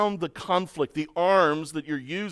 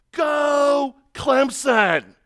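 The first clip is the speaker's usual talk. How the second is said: put-on loud, high holler, "go" stretched long; 8 semitones higher, 5 dB louder than usual. Retelling a guy fifty yards away screaming, retelling a guy screaming. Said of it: "I hear some guy start screaming".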